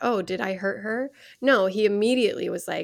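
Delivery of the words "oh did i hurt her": usual speaking voice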